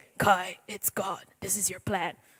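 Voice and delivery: deep, hushed superhero voice. Speaker imagines God speaking to them, in a Batman voice. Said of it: "That sounded like Batman".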